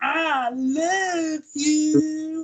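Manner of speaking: very high-pitched, bad, stretched-out Southern drawl. Recalling doing a wrestling show in character, in a bad Brother Love Southern accent. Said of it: "doing this really bad Southern American dialect".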